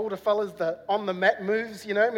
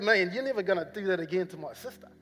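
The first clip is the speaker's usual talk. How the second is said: plain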